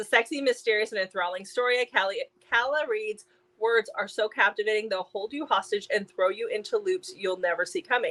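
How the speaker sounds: ordinary talk, nothing marked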